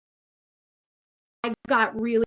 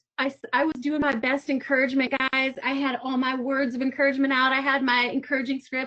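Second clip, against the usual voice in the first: ordinary talk, nothing marked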